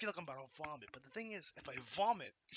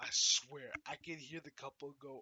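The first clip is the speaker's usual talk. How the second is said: ordinary talk, nothing marked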